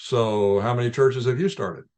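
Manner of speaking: normal talking voice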